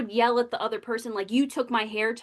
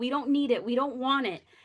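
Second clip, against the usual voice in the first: put-on pleading, begging voice. Retelling begging mom not to buy the last Wii: retelling own begging. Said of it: "I was begging her".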